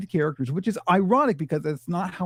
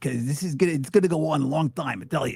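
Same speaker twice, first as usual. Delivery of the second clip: put-on troll voice with New York accent. Answering an interviewer as a troll puppet: Frankie troll voice with New York accent. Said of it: "people wanna know about my accent".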